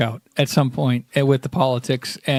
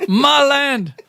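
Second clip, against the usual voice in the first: bad, put-on Scottish accent. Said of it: "trying to do a Scottish accent from Shrek".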